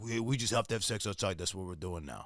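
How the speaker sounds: very low, soft, put-on dopey dumb-dude accent. Recalling a past phase of their own, in a dumb dude accent. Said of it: "I always just put that accent on when I'm being just a dumb dude".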